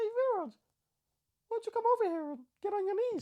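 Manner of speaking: pitched way up, calling out. Calling to Viraj after boasting of a good Mickey Mouse, in a Mickey Mouse voice. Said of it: "I can do a good Mickey Mouse".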